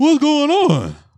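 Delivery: shrill, very high, loud dumb-guy voice. Describing another person's bit, imitating his dumb voice. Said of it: "his dumb voice is very funny".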